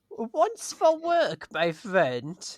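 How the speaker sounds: put-on sing-song, high Romanian, Eastern European accent. In an improv scene, a character asked about Transylvania answers in a Romanian accent. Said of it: "sort of Romanian Eastern European".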